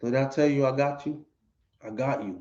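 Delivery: soft, hushed stage whisper. Retelling what the man said to the crying girl: imitating someone half-whispering. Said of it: "And he's whispering".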